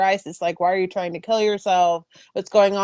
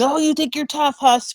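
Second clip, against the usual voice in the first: high-pitched taunting scream; 7 semitones higher than usual. Retelling arriving at the academy, men in his face: imitating men screaming. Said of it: "they're screaming in my face".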